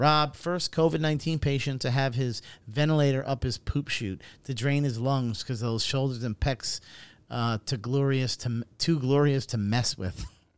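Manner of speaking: normal talking voice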